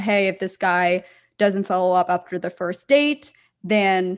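ordinary delivery

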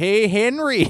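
put-on Canadian accent. Imitate how a Canadian man would call to Henry, in a put-on Canadian accent. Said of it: "He's Canadian, so he'd be like".

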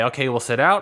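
ordinary talk

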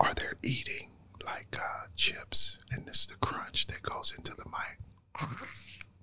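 soft ASMR whisper, close into the mic.

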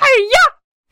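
high-pitched cartoon pig voice. Showing the one Miss Piggy line they can manage, Miss Piggy voice. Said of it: "when I do a Miss Piggy voice, all I can do is go".

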